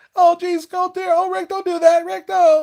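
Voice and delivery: very high, whiny voice, pitched way up. Describing a game he voices, speaker imitates Morty: whiny Morty voice. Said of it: "that kind of like like whiny voice".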